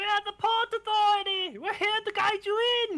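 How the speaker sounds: very high-pitched, loud, half-shouted hailing call. Voicing someone calling up from an approaching dinghy: kind of shouting. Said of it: "kinda shouting".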